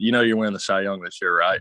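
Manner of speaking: normal talking voice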